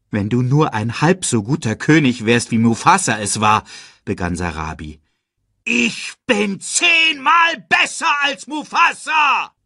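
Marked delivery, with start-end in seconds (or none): 5.6-9.4 very high-pitched, roaring bellow. Scar answers Sarabi comparing him to Mufasa; roaring. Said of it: "Brüllte Scar".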